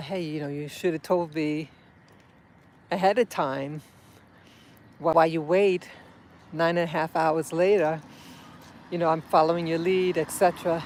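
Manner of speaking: plain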